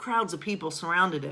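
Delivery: plain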